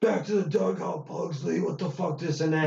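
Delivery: mock umpire voice, high, screaming yell. Retelling how umpires at softball games yelled at the speaker: imitating an umpire screaming. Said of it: "this guy's yelling, like, screaming at me".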